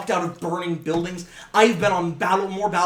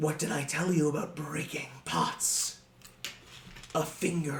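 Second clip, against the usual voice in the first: soft, whispered goblin creature voice; 2 semitones lower, 10 dB quieter than usual. Narrating a scene, the speaker voices the goblin in goblin voice. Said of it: "as the goblin just goes".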